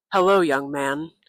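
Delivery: put-on deep voice. Recounting a voice from the night greeting him in a backyard, imitating a deep voice. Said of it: "I heard a deep voice appear".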